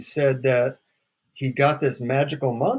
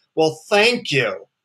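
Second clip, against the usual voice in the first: mock annoyed, snide, sarcastic delivery; 3 semitones higher, 5 dB louder than usual. Retelling own reply after being told the mantra: imitating own snide remark. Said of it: "I snide and say".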